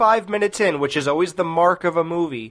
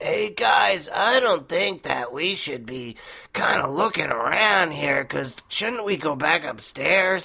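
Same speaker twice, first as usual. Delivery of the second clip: fake stoner-style voice; 4 dB quieter than usual. Complaining about an actor in a horror movie, mimicking his voice: phony Cheech Marin stoner voice. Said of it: "that phony stoner voice like".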